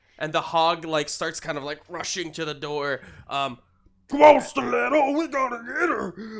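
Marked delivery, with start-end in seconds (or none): 4.1-6.4 pitched up and pushed loud. Voicing the Hog rushing to the door, calling to Stiletto: Hog voice. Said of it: "that's my Hog voice".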